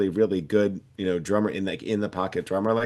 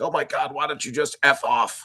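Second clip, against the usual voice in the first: higher-pitched, mild mock scream. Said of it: "he'd scream".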